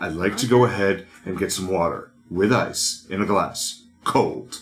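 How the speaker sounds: bone-dry, intense, dead-set delivery. Acting out someone ordering water at a bar, in a Chris Traeger voice. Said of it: "I just did the, like, that dry intensity".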